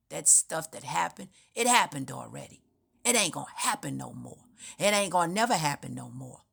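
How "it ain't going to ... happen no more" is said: ordinary talk, nothing marked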